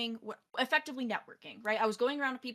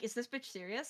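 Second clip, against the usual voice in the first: put-on bewildered reaction, quieter; 8 dB quieter than usual. Retelling how a man reacted when asked his name: imitating a bewildered look.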